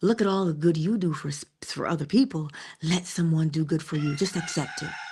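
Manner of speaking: whispered words. Retelling advice once whispered to her: retelling a whisper. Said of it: "I whispered to her".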